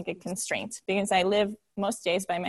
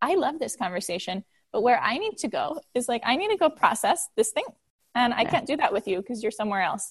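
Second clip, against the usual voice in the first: ordinary talk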